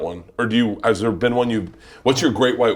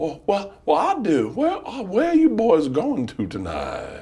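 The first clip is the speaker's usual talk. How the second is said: put-on drunk South Carolina Southern accent, pitched up; 7 semitones higher than usual. Showing off a favorite Southern accent: drunk South Carolina man accent. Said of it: "my favorite Southern accent is drunk man from South Carolina".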